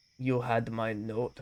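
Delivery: attempted, put-on German accent. Trying out the line in a German accent. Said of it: "make German sounding".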